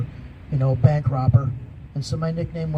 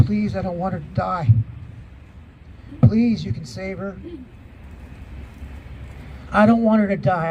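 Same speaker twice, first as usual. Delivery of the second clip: urgent, desperate, begging pleading voice; 4 semitones higher than usual. Retelling begging someone to save her, retelling a yelled plea. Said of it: "I was yelling it and begging".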